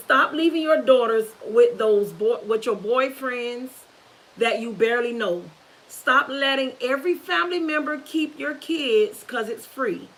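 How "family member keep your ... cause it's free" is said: ordinary talk, nothing marked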